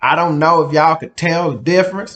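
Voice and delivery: Texan-accented delivery. Showing how regional accents differ, George Bush Texas accent. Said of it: "That's kind of my Texas accent".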